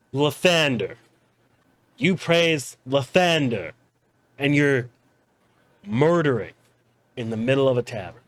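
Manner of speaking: dead serious, no joking. Voicing a sobered-up tavern figure confronting a player: dead serious. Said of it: "He is dead serious".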